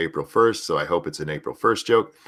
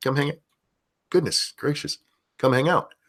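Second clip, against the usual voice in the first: high voice, speech broken by hiccups; 7 semitones higher than usual. Addressing viewers about tonight's open server: hiccuping. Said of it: "I'm over here hiccuping".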